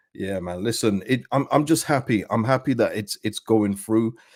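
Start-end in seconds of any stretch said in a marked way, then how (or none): none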